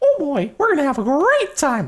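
squeaky high pitch with big swooping intonation. Starting the puzzle room levels: Mickey Mouse voice. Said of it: "I went like Mickey Mouse on that".

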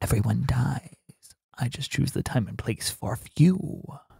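soft ASMR-style whisper. Doing some ASMR with a line from the movie. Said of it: "here is some A S M R".

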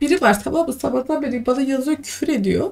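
high, tearful crying.

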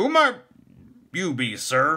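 stiff, very high voice. A gate warden challenges a stranger arriving at his door, stiff. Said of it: "the gate warden inquired stiffly".

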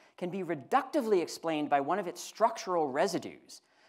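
reductively stressed hard with a long falling pitch.

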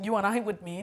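ordinary delivery

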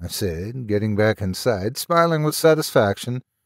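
ordinary delivery

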